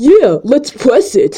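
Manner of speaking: put-on teenage boy voice. Reading a story's dialogue aloud, put-on teenage boy voice. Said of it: "then I'm going to do a teenage boy voice".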